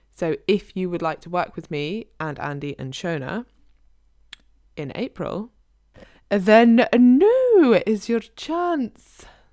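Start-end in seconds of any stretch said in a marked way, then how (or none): 4.8-9.3 loud, swooping, drawn-out put-on joke Scottish accent. Inviting listeners to join the april program: put-on scottish accent. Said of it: "That was my really good Scottish accent".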